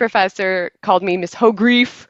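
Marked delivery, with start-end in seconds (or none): 1.2-1.9 put-on New York accent. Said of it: "he had this really great New York accent".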